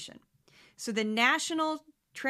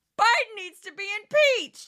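put-on fanatical voice; 11 semitones higher, 8 dB louder than usual. Doing an imitation for listeners before the next media clip, imitating a Fox fanatic. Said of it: "that's my imitation of a Fox fanatic".

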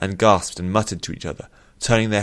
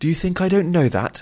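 cutting, sharp snap, very high pitch; 10 semitones higher than usual. Narrator reads the princess answering a guard who questioned her, snapping. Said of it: "snapped Nuthea".

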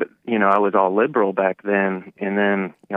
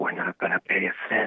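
put-on whispering politician voice, quieter; 7 dB quieter than usual. Mocking how Joe Biden talks: Joe Biden whispering impression. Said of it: "when Joe Biden starts whispering when he talks".

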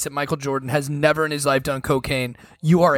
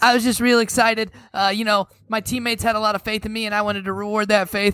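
put-on higher-pitched young teen voice; 7 semitones higher than usual. Act out a clip of the younger player after his game-winning shot, 15-year-old Michael Jordan voice. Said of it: "Like he's like 15 year old voice".

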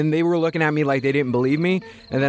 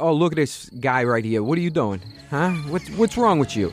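accent from Staten Island. Asked to show it, a cop from Staten Island does his Staten Island accent. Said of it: "do it with the accent for me?".

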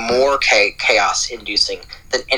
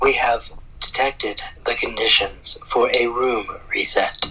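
put-on automated system announcement voice. Device not connected, so impersonating its room-reset announcement: imitating the room-reset device. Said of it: "I'm going to impersonate it".

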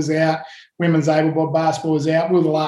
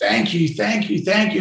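mock weepy, tearful crying voice; 3 semitones higher than usual. Telling how a crying man hugged you in the change room, imitating a man crying. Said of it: "and he's crying".

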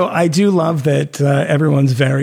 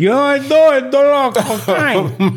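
very high, very slow, drawn-out bad Cuban accent; 11 semitones higher than usual. Joking about doing cocaine like in Scarface: bad Al Pacino Cuban accent. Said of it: "in a bad Al Pacino Cuban accent".

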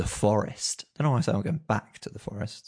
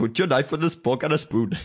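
Welsh-accented delivery; 5 semitones higher, 4 dB louder than usual. Comparing the speaker's own accents, then saying a line: Welsh accent. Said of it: "My Indian and my Welsh are pretty similar".

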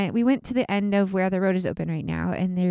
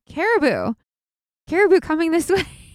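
mock loud, carrying shout; 9 semitones higher, 6 dB louder than usual. Recounting the moment he suddenly shouted from the overlook: retelling a shout. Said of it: "I hear him shout".

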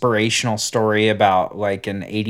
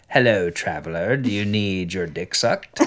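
hooded, cloaked stranger voice; 2 semitones lower, 3 dB quieter than usual. Acting out a guy in a cloak greeting a traveler: cloaked stranger voice. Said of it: "a guy in a cloak would be like".

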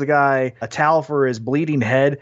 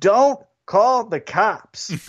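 mock, half-hearted, pitched-up mild yell; 5 semitones higher than usual. Telling how a bleeding man jumped out of his truck, retelling his yell. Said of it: "he just yells".

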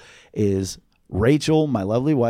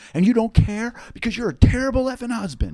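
screaming rant, higher; 11 semitones higher than usual. Retelling a party fight where a wife screamed at her husband: imitating someone screaming. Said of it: "Jenna would be screaming in his face".

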